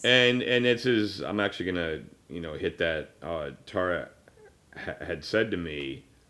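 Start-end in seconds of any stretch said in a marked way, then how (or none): 3.2-6.0 slower, teary, choked-up voice. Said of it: "I'm not getting choked up".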